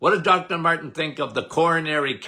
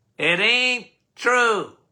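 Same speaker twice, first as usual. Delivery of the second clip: mock forceful, emphatic, insistent screaming; 6 semitones higher than usual. Retelling how he answered claims that coffee is bad: retelling own past screaming. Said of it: "And I was screaming".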